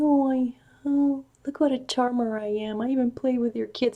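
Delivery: taunting, sneering tone. Describing Trump playing with children, mocking Trump impression.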